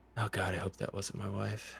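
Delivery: quiet muttering under the breath. Voicing a character right after his arrow hits: muttered under his breath. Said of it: "And under his breath".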